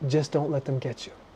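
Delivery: very soft, quiet, hushed murmured words. Retelling what a man looking into the fire finally said to him, in a quiet voice. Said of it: "He says in a quiet voice".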